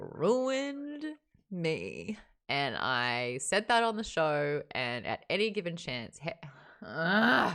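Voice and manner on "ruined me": high, wavering voice breaking up with tears. Telling how the last book's ending moved them: choking up with tears. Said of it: "you can see my eyes are already getting a little".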